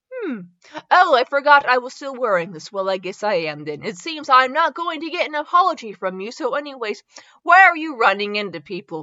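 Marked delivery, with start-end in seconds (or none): none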